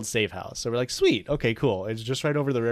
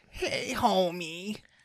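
bad, pitched-up cartoon woman voice; 8 semitones higher, 3 dB quieter than usual. Joking with friends, the speaker attempts a bad Marge Simpson impression. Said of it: "That was a really bad Marge".

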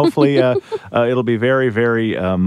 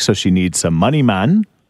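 poor, fake, put-on Jamaican accent; 3 semitones lower than usual. A podcast host introducing a caller, in a bad jamaican accent. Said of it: "that Jamaican accent".

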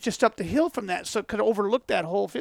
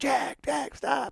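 put-on whisper, much higher; 5 semitones higher, 5 dB quieter than usual. Walking up late at night, telling a companion to stop, retold whisper. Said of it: "and I'm whispering".

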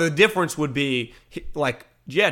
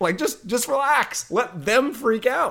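high, slow, calm, unbothered voice. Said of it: "who taught Patricia".

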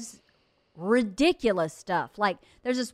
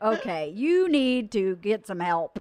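ordinary delivery

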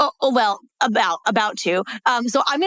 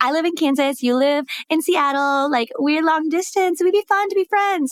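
raised, self-mocking, parodying tone; 6 semitones higher than usual. Retelling asking him to be pen pals, mocking own past tone. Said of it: "I'm like making fun of myself with this tone".

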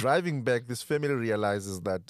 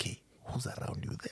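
secretive, hushed, breathy whisper. Retelling a phone call where the sister answers: imitating sister whispering. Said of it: "she was whispering".

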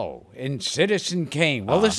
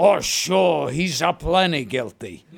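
put-on old comedian stage voice. Doing a comedy bit, Chico Marx in Twelve Angry Men: Chico Marx voice. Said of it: "Chico Marx in Twelve Angry Men".

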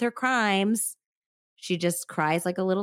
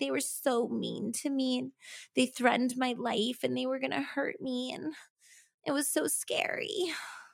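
mock teary, self-pitying, high, soft voice; 5 semitones higher, 6 dB quieter than usual. Speaker mocks a woman who spoke tearfully on the show, mock-crying imitation. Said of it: "She's like crying".

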